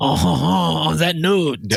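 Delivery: deliberately bad put-on French accent. Wrapping up an appeal to viewers, the host signs off in a bad Pepe Le Pew voice. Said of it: "my bad Pepe Le Pew voice".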